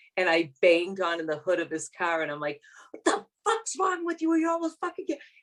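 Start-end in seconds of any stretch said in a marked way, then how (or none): 2.9-5.2 put-on very high, enraged, furious screaming. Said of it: "this huge tirade on this poor cab driver".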